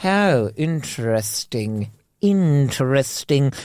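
snooty, sneery, upper-class posh accent. Mocking how anything sounds in that posh accent: put-on sneery posh accent. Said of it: "It's that little sneery".

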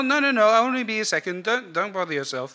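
calling out from afar. Voicing a character answering an offer of help: calling out. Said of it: "she calls out".

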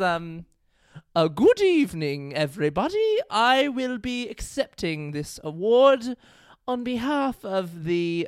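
put-on British accent, very slow, drawn out, sing-song. Retelling how she read an award acceptance she had to do in a put-on british accent. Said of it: "she must read it in a British accent".

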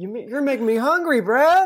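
mock yelling. Telling a story about a guy rocking on the rollers, retelling a yell. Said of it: "I'm yelling".

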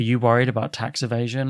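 ordinary talk, nothing marked

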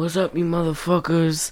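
very quiet, low mumble, barely audible. Mocking an actor's line in a later film: imitating Steven Seagal. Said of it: "he goes".

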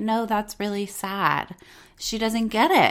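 ordinary delivery

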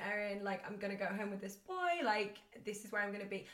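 ordinary talk, nothing marked

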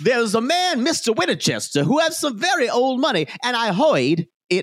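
put-on very high, campy accent. Retelling a TV scene, imitating Nathan Lane's campy accent. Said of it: "literally sounds like Foghorn Leghorn".

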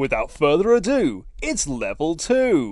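called-out bingo caller announcing style. Quoting a sign that marks the floor level, in a bingo caller voice. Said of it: "You sound like a bingo caller".

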